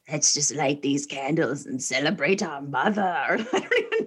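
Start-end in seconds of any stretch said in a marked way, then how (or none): 0.1-3.0 low, eerie, sinister, super creepy voice. Retelling what a man said during an argument about a cake, in a super creepy voice. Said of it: "he says in this like super creepy voice".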